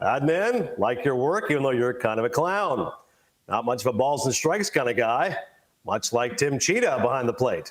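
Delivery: deep, dropped announcer-style voice. Retelling doing an impression of the announcer Sean McDonough. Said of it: "I do an impression of Sean".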